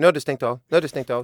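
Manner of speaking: put-on curt voice. Quoting what the other person always says: mock-curt imitation of them. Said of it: "Varför härmar du alltid mig sådär kort?".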